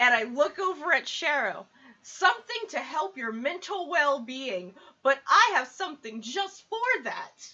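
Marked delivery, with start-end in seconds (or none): 2.0-7.5 loud yelling in character voice. Offering another character something for their mental well-being: shouting in character. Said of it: "why are you shouting?".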